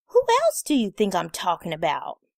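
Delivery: put-on sassy know-it-all teenage voice, swooping pitch. Narrator reads a teenage girl's reply to the narrator, in her sassy teenage tone. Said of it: "She says in her sassy tone".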